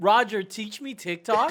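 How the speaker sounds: loud, theatrical, play-acted dramatic pleading tone. Retelling a coworker's request to the whole room: imitating a loud dramatic announcement.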